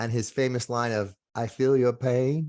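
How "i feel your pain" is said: slow, drawn-out Southern drawl. Quoting a famous line about empathy: Bill Clinton impression, Southern accent. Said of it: "That's my impersonation of a Southern accent".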